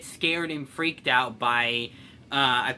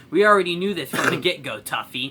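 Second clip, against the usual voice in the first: ordinary delivery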